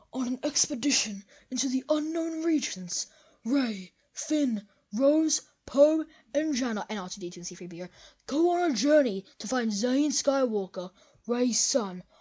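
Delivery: put-on nature documentary narrator voice. Reading out a made-up movie plot: David Attenborough voice. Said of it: "I'm gonna do, like, a David Attenborough voice".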